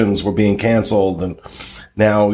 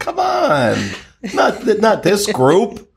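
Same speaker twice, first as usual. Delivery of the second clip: very high, swooping, drawn-out mock disbelief, sarcastic; 11 semitones higher than usual. Reacting to a claim about poor communication from DVC management: sarcastic. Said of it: "I'm being sarcastic, of course".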